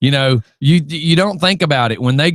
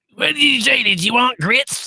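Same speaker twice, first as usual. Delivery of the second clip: very high, nasal smoker-waitress voice; 10 semitones higher than usual. Saying another speaker sounds like a waitress, the speaker takes an order: Mel's Diner waitress voice. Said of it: "that waitress at like Mel's Diner that would be like trying to smoke a Marlboro".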